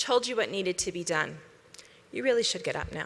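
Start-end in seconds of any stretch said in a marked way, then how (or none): 2.1-3.1 hushed, very quiet, gentle, kind but firm, self-assured. Speaker demonstrates the soul's voice, like a wise old teacher: quiet, kind and firm. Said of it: "very quietly, with kindness and firmness".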